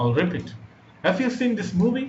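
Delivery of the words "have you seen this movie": pitch climbing high on "movie". Demonstrating rising intonation on an example question, high rise on movie. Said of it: "It is a high rise intonation".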